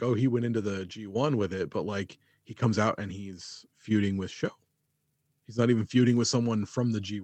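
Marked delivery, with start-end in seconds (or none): none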